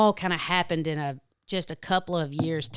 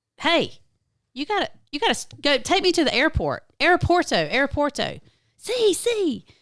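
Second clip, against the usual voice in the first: put-on screaming, higher and louder; 10 semitones higher, 5 dB louder than usual. Retelling telling a cab driver to go back to the airport: retelling screaming. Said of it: "I start screaming at him".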